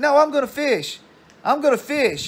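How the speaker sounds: mock very high, shrieking, screaming child voice. Retelling a kid arguing with a woman about fishing, imitating a kid screaming. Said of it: "and he would scream".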